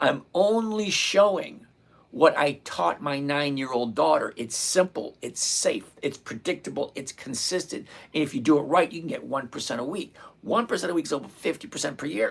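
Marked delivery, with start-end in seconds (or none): 0.0-1.6 slowly spelled-out repeat. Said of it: "I'm gonna repeat this slowly so you'll get it".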